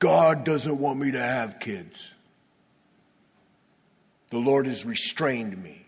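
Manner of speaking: mildly exasperated, a little frustrated tone. Reading about Sarah and Abram, the speaker voices Sarah's words, mock-frustrated. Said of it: "Sort of a little frustrated".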